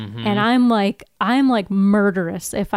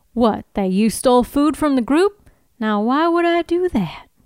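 put-on strong Southern accent, laid on thick; 4 semitones higher than usual. Acting out a scene as Sawyer: Southern Sawyer voice. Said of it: "I do a way more Southern Sawyer".

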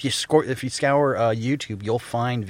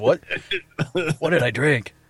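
mock alarmed, freaked-out, baffled disbelief; 4 semitones higher than usual. Retelling own past reaction: imitating own freaked-out reaction. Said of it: "You must have been freaking out".

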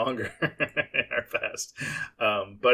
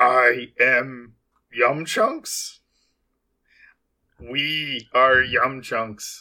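tree creature character voice; 3 dB louder than usual. Speaker tries out a Groot impression. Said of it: "That was my Groot impression".

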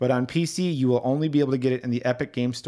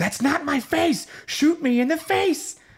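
put-on screaming character voice, higher. Describing a game side quest, imitating Face McShooty screaming. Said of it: "he's screaming at you".

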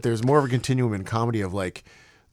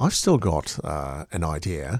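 put-on Australian voice, lower pitch; 8 semitones lower, 3 dB quieter than usual. Imitating Simon's thoughts on close-up magic: Simon impression. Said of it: "That was my impression".

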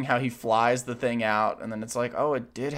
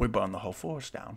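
put-on Cockney actor voice, quieter; 2 semitones lower, 8 dB quieter than usual. Asked to do an impression, performing it: Michael Caine impression. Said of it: "Can you do your best Michael Caine impression right now?".

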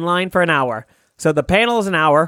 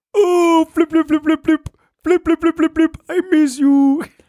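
very high, rapid, babbling crying; 12 semitones higher than usual. Doing a bit about a puppet chef whose dog died: Swedish Chef crying. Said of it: "It's that Swedish chef crying".

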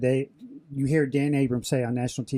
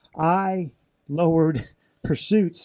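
tongue-in-cheek, sarcastic, boastful tone; 4 semitones higher, 4 dB louder than usual. Answering a reporter's framing of the numbers, sarcastic. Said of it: "I'm saying this sarcastically".

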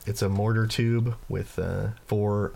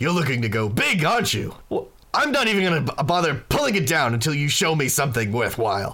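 higher, louder, boisterous voice. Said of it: "And he says".

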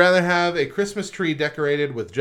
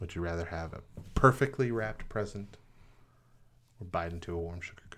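very low, very soft, hushed put-on ASMR murmur; 9 semitones lower, 12 dB quieter than usual. Reading a would-you-rather question aloud, put-on low asmr voice. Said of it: "I'm getting really, really low with my voice now. It's a A S M R moment".

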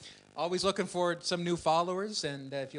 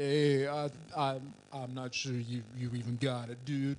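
mumbled put-on tough-guy impression; 3 semitones lower than usual. Running through celebrity impressions, next up: Sylvester Stallone voice. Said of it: "That's my best slice".

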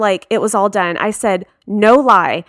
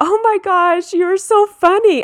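mock giggly, laughing chatter, pitched very high; 10 semitones higher than usual. Retelling what a laughing girl said while the speaker was hurt, imitating someone laughing while talking. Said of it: "She's laughing and she's like".

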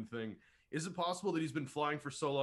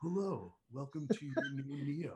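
slow, mellow, relaxing voice. Imagining a car narrated by Keanu Reeves: imitating Keanu Reeves, relaxing voice. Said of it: "his voice is so relaxing".

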